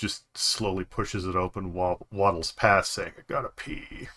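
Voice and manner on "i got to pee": whispered, barely awake, half-asleep mumble. A bleary-eyed halfling waddles past in the night, speaking half asleep. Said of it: "almost half asleep".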